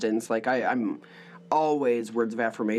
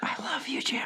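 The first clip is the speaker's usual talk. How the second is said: teasing, playful soft whisper; 14 semitones higher, 5 dB quieter than usual. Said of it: "whisper into your ear".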